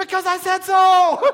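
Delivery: very high, stretched-out screaming shout. Recounting being stung by yellow jackets and running away, retelling own screaming. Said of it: "And so I'm screaming".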